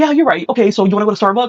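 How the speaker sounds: high, fast, eager, agreeable voice.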